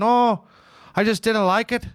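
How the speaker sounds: very high, bad, failing Scottish accent. Acting out someone's reply about never trying an iPad, in a bad Scottish accent. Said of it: "it's running away from me, the Scottish accent".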